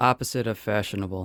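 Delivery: flat, unvaried, expressionless monotone voice. Giving a word clue to a teammate in a timed game, in a monotone voice. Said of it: "communicate these in a monotone voice".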